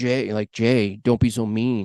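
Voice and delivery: put-on whisper.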